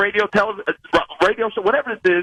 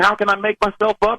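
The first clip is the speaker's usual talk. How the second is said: plain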